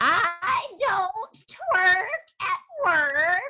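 witchlike storybook witch voice. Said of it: "he sounds like a witch".

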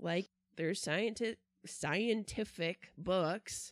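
slow, sarcastic air-quote drawl on "scientific".

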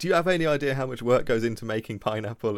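loud yell. Retelling how he answers the store clerk: imitating someone yelling at a clerk. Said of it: "starts yelling at the store clerk".

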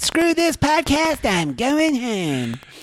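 put-on very high, swooping bratty kid voice. Joking between podcast co-hosts, one does a bad Cartman impression. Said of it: "that was the worst Cartman impression".

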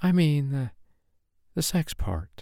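very slow, faltering, halting stage whisper. She explains to him what she meant: dropping to a half-whisper. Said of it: "her voice dropped to a mere whisper".

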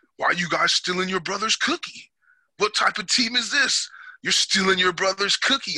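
high-pitched telling-off yell. Retelling the coach yelling at the whole team in a meeting, imitating Coach Rod yelling. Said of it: "He's yelling at us".

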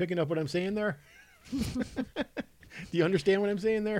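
teasing, patronizing tone. Teasing the other speaker with the trick just explained: mock condescending questions. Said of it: "I'm feeling a little attacked".

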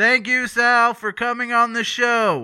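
shrill, very loud, high-pitched yelling. Thanking a guest with a hearing aid for coming on the show: yelling. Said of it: "sorry for yelling in your ear".

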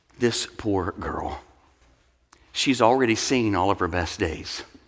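imitated tender tone. Retelling what a girl overheard her physician say to her parents, imitating a tender voice. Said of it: "with a tender voice say".

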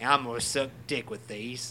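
put-on Australian-sounding accent. Repeating a quoted line after hearing the accent sounded Australian; Mel Gibson impression. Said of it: "this sounded Australian".

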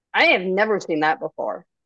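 plain reading voice

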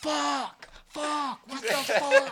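very high, very loud, slow, shrill top-of-lungs scream. Retelling seeing a spider while in the middle of the road: imitating own screaming. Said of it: "in the middle of the road screaming".

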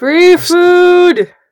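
magically amplified, high booming shout, "food" drawn out. In a game, a player voices Callisto joining the call, magically amplified shout. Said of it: "help with her own thaumaturgy".

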